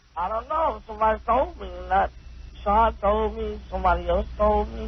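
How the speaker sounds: tearful crying voice, close to tears. Answering a question about when he learned a friend had died, sounding like crying. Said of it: "Sounds like he's crying".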